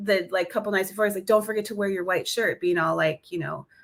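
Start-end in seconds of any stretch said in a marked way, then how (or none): 1.3-2.6 mock sarcastic tone. Retelling John's reminder a couple of nights before: imitating a sarcastic reminder. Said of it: "being sarcastic and stuff".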